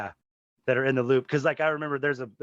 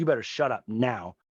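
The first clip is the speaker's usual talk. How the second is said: mock freaking out, angry outburst. Recapping a story where a character turns on others, acting out a character freaking out. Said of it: "she freaks out".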